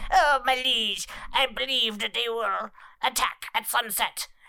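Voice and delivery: put-on hobgoblin character voice. Speaker voicing a hobgoblin sage addressing the general, in a hobgoblin sage voice. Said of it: "I'm about to do the voice anyway".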